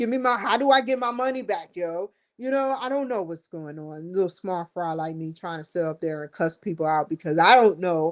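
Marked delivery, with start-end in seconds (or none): 0.0-2.1 mock hollering, demanding, pitched-up yell. Retelling demanding money back from the investment company: imitating own past yelling. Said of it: "I'm yelling at them".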